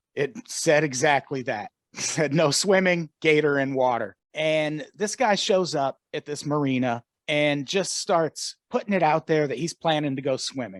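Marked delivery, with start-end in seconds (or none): none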